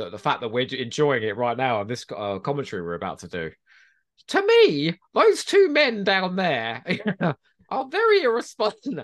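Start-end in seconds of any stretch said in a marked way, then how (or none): 4.3-9.0 badly done voice, high, swooping and sing-song. Commentating with another speaker, doing a terrible Mary Whitehouse impression. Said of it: "my Mary Whitehouse impression is terrible".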